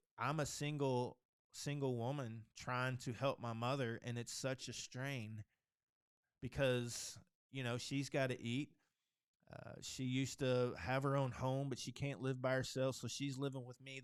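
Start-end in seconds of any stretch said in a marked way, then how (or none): none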